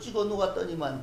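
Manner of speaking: normal talking voice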